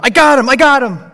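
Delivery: shrill, very high, very loud, full-volume excited shout. Retelling the friend behind him catching a falling kid, acting out an excited shout. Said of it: "I heard my friend behind me go".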